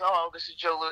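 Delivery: normal talking voice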